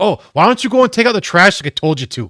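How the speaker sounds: put-on Wisconsin accent, very high, shrill and booming loud. Retelling a comedy video's dad line: imitating a Wisconsin accent. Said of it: "So the voice accent makes it".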